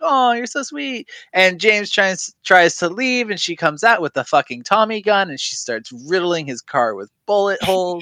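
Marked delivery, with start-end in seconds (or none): 0.0-1.1 put-on sweet, doting, high little old-lady voice. Retelling how a grandma greets James, imitating grandma. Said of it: "she like curtsies when she sees James".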